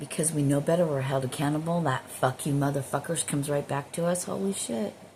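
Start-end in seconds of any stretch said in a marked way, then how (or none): none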